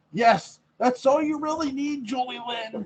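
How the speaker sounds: yelling, high and loud.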